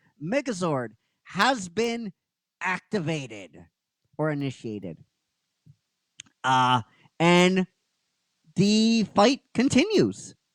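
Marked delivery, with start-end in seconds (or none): 0.2-5.0 grand, big announcer-style declaiming voice. Speaker retells a fight scene where a voice announces the megazord, booming announcer voice. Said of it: "this booming voice goes".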